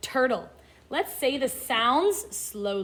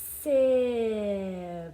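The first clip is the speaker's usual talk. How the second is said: word slowly sounded out, sound by sound; 3 semitones lower than usual. Reading a word aloud in a phonics lesson, sounding out slowly. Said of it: "Let's say the sounds slowly".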